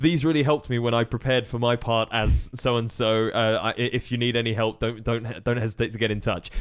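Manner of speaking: ordinary talk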